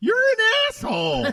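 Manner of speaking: voice jumping way up, very high-pitched. Imitating a friend's outburst: imitating Tina's high-pitched voice. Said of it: "She gets real high pitched".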